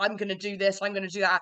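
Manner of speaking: ordinary talk, nothing marked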